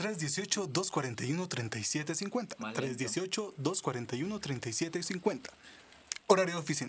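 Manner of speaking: put-on radio announcer voice. Repeating the phone number for listeners when asked, in a radio announcer voice. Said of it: "Con voz de locutor".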